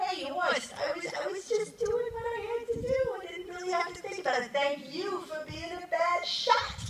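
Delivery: put-on loud, very high Italian New York accent. Retelling what Ike said back to Horst, in Ike's Italian New York accent. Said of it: "who's Italian, New York, typical American".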